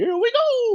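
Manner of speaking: very high video-game hero voice, cartoon style. Quoting how the game character sounds in the games: Mario voice. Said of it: "he'll say stuff like".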